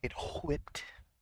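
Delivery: put-on heavy h in "whipped". Mocking the narrator's pronunciation: mocking heavy H in "whipped". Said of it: "so much emphasis on the H".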